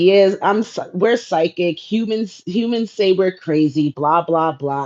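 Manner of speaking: plain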